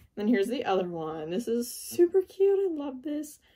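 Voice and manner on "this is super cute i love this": high-pitched, excited, delighted gushing voice. Showing the items she sells on Depop, in a high-pitched voice. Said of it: "Why is my voice getting so high?".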